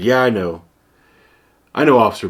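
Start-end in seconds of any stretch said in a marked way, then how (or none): none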